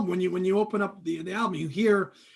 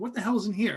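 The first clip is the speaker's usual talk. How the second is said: ordinary delivery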